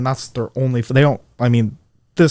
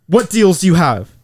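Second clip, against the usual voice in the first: high, pushy, super-aggressive tone; 6 semitones higher, 4 dB louder than usual. Retelling a lady who barged into her office without saying hi, mock-aggressive demanding customer. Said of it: "she was super aggressive".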